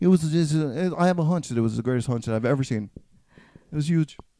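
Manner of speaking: poorly done, halting put-on voice. Doing an impression, then admitting it really sucks: Donald Trump impression. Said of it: "that was my Donald Trump impression".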